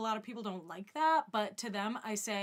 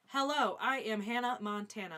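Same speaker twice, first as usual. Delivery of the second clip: put-on stiff, scripted-sounding delivery. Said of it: "she's clearly reading from a script".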